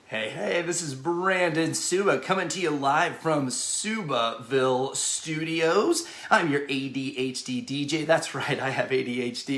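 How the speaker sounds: usual speaking voice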